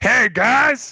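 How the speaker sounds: very high fat-guy voice. Imitating a character's catchphrase for the others: imitating that fat guy. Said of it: "like that fat guy".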